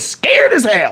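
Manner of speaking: put-on drawled Southern country accent. Retelling what a lawyer told the jury: imitating a southern country accent. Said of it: "The way he had a Southern country accent".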